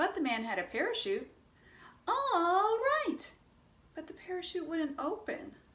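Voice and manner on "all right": shrill, very high, squeaky "all right". Telling a call-and-response joke, answering the narrator in a high-pitched voice. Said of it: "you use a low-pitched voice".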